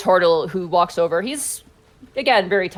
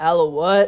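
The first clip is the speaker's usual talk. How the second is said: wary, disbelieving pirate voice. Voicing a character who narrows his eyes at the players: suspicious character voice. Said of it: "He kinda narrows his eyes and he goes".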